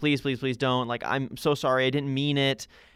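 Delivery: imitated desperate, begging plea. Retelling pleading with a teacher not to be sent away: imitating own past begging.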